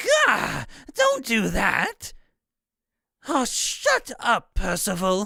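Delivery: put-on very slow, slightly raspy, swooping girlish voice. Trying out a character voice, a female character scolding another character, slightly raspy girly voice. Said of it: "slightly raspy voice".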